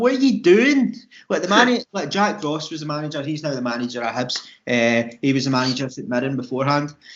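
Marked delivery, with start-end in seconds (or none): 0.0-0.9 incredulous, blurted out high and loud. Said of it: "It was like".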